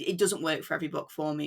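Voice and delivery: ordinary talk, nothing marked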